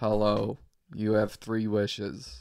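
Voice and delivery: slow, utterly bone-dry deadpan delivery. Picturing a really dry guy playing the genie: imitating a really dry guy. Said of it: "this really dry guy".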